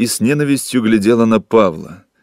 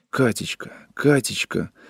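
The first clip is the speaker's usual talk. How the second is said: soft, pleading, begging whisper; 8 dB quieter than usual. A man whispers to Katechka, begging her, a pleading whisper. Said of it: "шептал он умоляюще".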